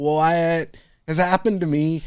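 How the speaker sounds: put-on very slow, high bawling, "what" stretched. Parent recalls watching Inside Out after their first kid, retelling words said while bawling. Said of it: "and I was bawling".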